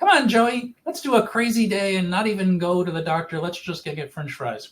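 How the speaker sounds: sunny, cheerful voice. Retelling what Bobby said to Joey, imitating Bobby's happy cheerful voice. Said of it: "This is just her always happy, cheerful voice".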